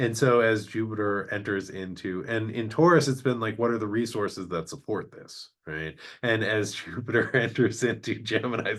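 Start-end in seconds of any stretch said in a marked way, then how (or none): 6.2-8.8 speaking through laughter. Explaining an astrology transit, laughing while talking. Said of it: "sorry, I'm laughing".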